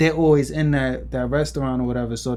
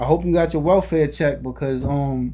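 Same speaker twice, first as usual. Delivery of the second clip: ordinary delivery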